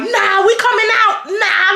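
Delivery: mock high scream with words stretched long. Speaker retells a standoff after being told to stay in the room, imitating Zebra screaming. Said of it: "like Zebra screaming".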